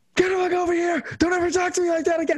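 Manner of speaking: shrill, very high-pitched, barking yell. Retelling how a man kept yelling at the speaker, retelling someone yelling. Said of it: "He just starts yelling at me".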